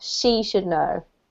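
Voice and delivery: heavy emphasis on the word "she". Explaining where the emphasis should go in a sentence: stress on she. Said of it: "we need to put the emphasis on her".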